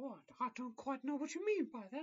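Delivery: loud, very high squeaky mouse voice, swooping pitch. Playing a shopping scene, answering a question about dresses in a Mickey voice. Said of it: "I've turned to Mickey".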